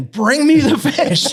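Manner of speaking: shrill, very high, drawn-out scream. Retelling a gator coming closer and screaming for the fish, retelling a scream. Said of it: "I'm screaming at David again".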